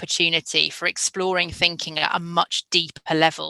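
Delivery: ordinary delivery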